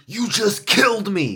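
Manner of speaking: high, loud, furious pissed-off yell. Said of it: "he was pissed".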